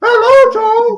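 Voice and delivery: very high, loud squeaky voice. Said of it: "have to be high-pitched?".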